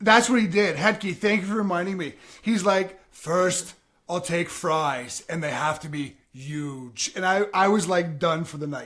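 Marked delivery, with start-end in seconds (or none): 3.1-7.1 low, slow, huge, drawn-out delivery. Retelling how a friend ordered food one night, speaker does a Donald Trump impression. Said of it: "Chase ordered his food as Donald Trump".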